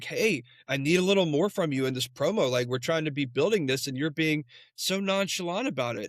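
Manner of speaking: ordinary talk, nothing marked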